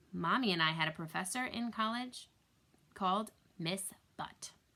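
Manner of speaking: usual speaking voice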